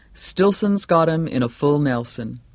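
ordinary delivery

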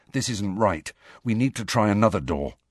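plain

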